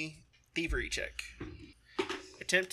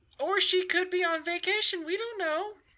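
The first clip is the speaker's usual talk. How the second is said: much higher, very unhappy gnome voice. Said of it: "a very unhappy gnomish voice".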